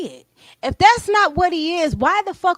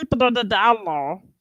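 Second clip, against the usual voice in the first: low, frog-like puppet voice; 5 semitones lower than usual. Imitating a guy from the video: Kermit the Frog voice. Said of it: "Why he sound like Kermit the Frog?".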